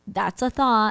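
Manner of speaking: put-on passive-aggressive voice. Retelling what a man says, imitating someone very passive aggressive. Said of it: "in a very passive aggressive way".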